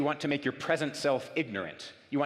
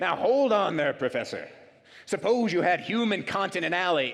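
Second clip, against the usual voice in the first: big, loud, booming voice; 4 semitones higher, 5 dB louder than usual. Professor retelling how a student interrupted his class discussion, in a booming voice. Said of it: "a booming voice".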